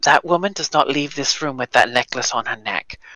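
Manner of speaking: private, hushed half-whisper. Leaning over to another character in the scene: half-whispering. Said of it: "and just whisper".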